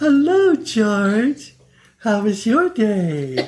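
very high, sing-song, sweet, polite best-behavior voice. Recalling how she acted when he came home, a speaker imitates her george voice. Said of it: "we called it her George voice".

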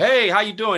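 high, playful, friendly joking tone. Speaker retells a man with crossed arms greeting him; imitating a man joking around. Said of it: "He's like joking with me".

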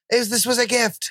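acted scream. Recounting people taking off a designer shirt, retelling a scream. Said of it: "While I'm screaming".

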